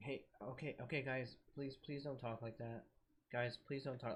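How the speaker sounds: soft, quiet, gentle voice. Retelling how a guy answered people telling him to shut up, imitating a soft voice. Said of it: "in their soft ass voice".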